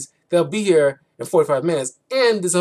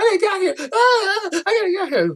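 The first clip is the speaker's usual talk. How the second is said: mock panicked freaking out, voice pitched way up. Retelling a movie scene, imitating a freak-out from Airplane. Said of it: "freaks out like the woman in Airplane freaks out".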